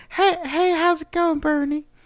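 very high, drawn-out, slow voice. Pretending to be the other speaker's friend Custom: pretending to be Custom. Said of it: "pretend to be it?".

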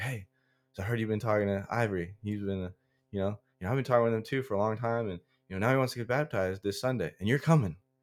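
put-on voice, full of energy. Retelling a pastor's call about a baptism: imitating energetic Pastor Steven. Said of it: "He was super energetic guy".

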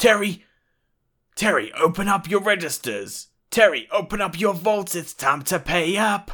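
very high, very loud, shrill distant yelling. Voicing a thug who is yelling at Terry in the background: yelling in the background. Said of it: "You hear him yelling in the background".

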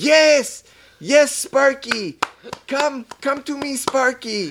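very high, slow, drawn-out calling voice. Retelling a movie scene, quoting the character: calling like to a pet. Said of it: "he's calling him like a pet".

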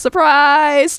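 mock announcement, belted out high and loud.

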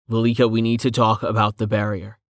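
ordinary delivery

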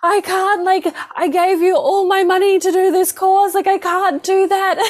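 put-on full freak-out panic, very high. Retelling learning of an unexpected course fee, reenacting freaking out. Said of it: "I'm like freaking out".

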